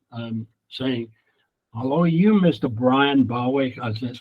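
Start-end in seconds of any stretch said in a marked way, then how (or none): 1.7-3.7 put-on American accent in a woman's voice. Retelling a surprise phone call from a stranger, in an american woman's voice. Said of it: "an American voice, a lady's voice".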